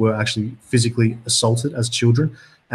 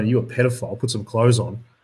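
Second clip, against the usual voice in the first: plain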